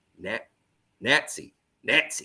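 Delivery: exaggerated, over-the-top put-on Southern accent. Speaker imitates how a man in a movie said a word, over-the-top southern accent. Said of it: "he had this Southern accent that was so over the top".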